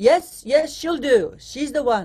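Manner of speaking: big, slow, booming voice from above, godlike. Recalling her audition, a voice over the overhead microphone approves her: imitating Harry's big voice. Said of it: "It was like God was speaking".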